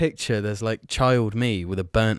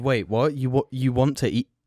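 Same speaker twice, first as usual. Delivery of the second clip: normal talking voice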